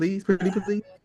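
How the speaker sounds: sweet, high, wheedling begging tone, acted out. Retelling a coach asking the refs for a timeout back: imitating someone begging. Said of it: "I saw him over there beg".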